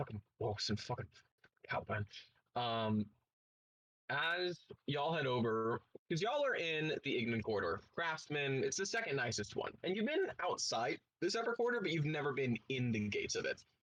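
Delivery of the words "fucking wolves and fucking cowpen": fast, mumbled muttering under the breath. A game master voicing a character escorting the party, muttering to himself. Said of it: "just kind of muttering to himself".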